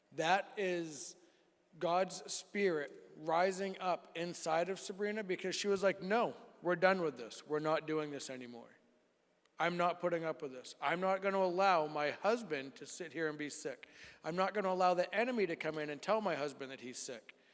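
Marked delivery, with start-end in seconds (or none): none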